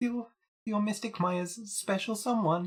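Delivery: very high put-on voice, as high as possible. Voicing a character addressing Nick, despite a cold: highest voice possible. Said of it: "that's the highest voice I can do".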